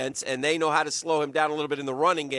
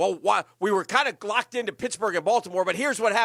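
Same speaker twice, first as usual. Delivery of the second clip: fake broadcaster voice, like a studio host; 5 semitones higher than usual. Retelling what Scott Hansen said on air: Scott Hansen fake broadcaster voice. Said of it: "he comes back in his fake broadcaster voice".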